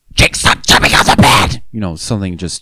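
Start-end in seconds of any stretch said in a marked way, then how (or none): 0.2-1.6 play-acted, really aggressive, scary scream. Retelling the brother's description of a voice yelling at Jake, imitating aggressive yelling. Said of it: "really, really aggressive".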